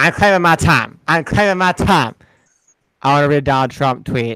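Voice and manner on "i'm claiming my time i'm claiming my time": insistent line said twice in character. Quoting a congresswoman claiming her time: imitating Maxine Waters. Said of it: "like Maxine Waters".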